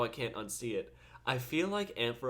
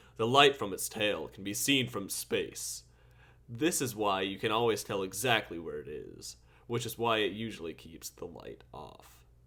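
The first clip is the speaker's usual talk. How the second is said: low, deep, put-on broadcast announcer delivery; 5 semitones lower than usual. Speaker taking over the explanation, in an announcer voice. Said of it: "Let me get on my announcer voice".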